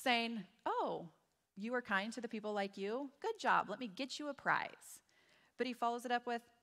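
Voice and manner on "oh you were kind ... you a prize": play-acted, gently needling, light sarcasm. Paraphrasing a Bible verse aloud: imitating Jesus being sarcastic. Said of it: "I think Jesus is being a little bit sarcastic here".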